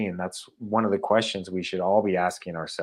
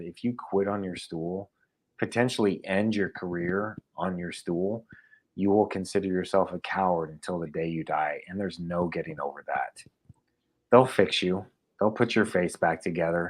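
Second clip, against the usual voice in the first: ordinary delivery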